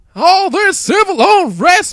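put-on loud, belted, high-pitched country accent. Retelling a scene where Nick Fury reacts, Nick Fury a bit country. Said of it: "Let's keep Nick Fury as some type of country thing".

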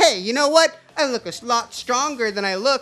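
put-on teeny tiny high pipsqueak goblin voice. Narrating a story, the little goblin answers back, in a tiny goblin voice. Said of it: "little pipsqueak goblin's like".

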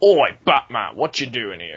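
exaggerated British accent with swooping pitch. Describing the Penguin from the trailers, the speaker does the Penguin's British accent. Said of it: "he sounds really British in the trailers. Like".

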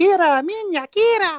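put-on very high, loud voice with a vague Italian accent. Recalling a puppeteer's Podling line from the original film: imitating Jerry Nelson's Podling voice. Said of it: "I just hear his voice going".

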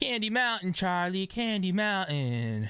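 whining, whinging put-on voice, pitched high. Quoting a line from a scene in a whiny put-on voice. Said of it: "And I supposed to like a whiny voice".

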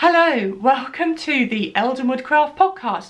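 loud, talking through laughter. Opening a podcast episode after several attempts, laughing while talking. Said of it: "I'm laughing because this is about attempt number five".

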